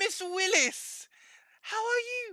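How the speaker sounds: very high, fully British put-on accent. Retelling a man greeting a woman, put-on British accent. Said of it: "he starts talking all British with her".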